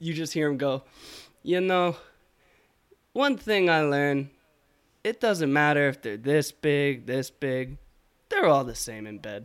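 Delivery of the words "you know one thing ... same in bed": put-on heavy, thick, laid-on Spanish accent. Retelling what a guy said while watching sorority girls, thick spanish accent. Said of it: "in the thickest Spanish accent".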